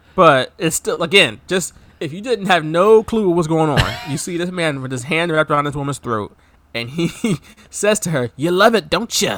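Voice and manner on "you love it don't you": raspy pro wrestler style voice. Act out what the man says to the woman he holds by the throat, in a raspy Macho Man voice. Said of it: "his raspy, you know, Macho Man voice".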